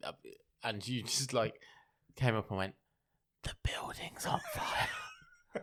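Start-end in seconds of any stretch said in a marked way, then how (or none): 3.4-5.6 mock whisper, higher and quieter. Acting out whispering an emergency warning to a coworker: pretend whisper. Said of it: "whisper everything".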